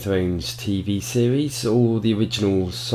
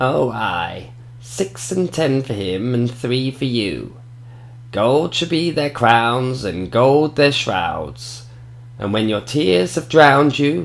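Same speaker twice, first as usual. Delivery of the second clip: put-on witch voice; 4 semitones higher than usual. Retelling a prophecy scene, voicing Maggie's reply to Cersei: Maggie witch voice. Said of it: "I'm going to do my best witch voice here".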